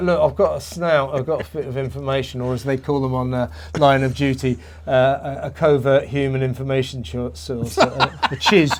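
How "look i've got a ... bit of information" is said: usual speaking voice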